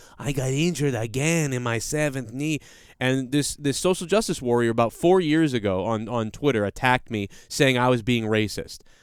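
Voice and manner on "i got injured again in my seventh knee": mock Mexican accent, slower pace. Speaker retells mocking an injured man, in a mock Mexican accent. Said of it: "I was joking with the accent".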